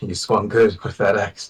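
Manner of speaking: speaking through streaming tears, tearful. A character speaks to Valvada just before falling to his knees sobbing, tearful. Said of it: "very visibly like tears strewn".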